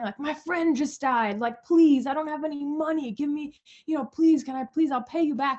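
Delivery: put-on, high-pitched fake sobbing and crying. Telling about a man who came in causing a scene, imitating his fake crying. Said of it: "kind of like fake crying".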